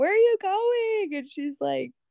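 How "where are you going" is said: play-acted piercing, high-pitched, shrill yell. Retelling calling after her as she left: imitating own past yelling. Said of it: "yelling at her".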